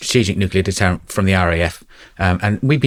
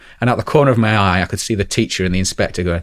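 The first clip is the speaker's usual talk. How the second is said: ordinary talk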